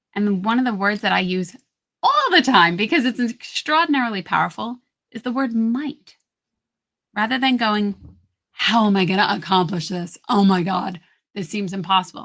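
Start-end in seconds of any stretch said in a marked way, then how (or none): 7.5-12.2 heavy, intense, stressed, worried tone. Contrasting ways to ask yourself questions, in a heavy, intense stressed tone. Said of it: "Really heavy, really stressful".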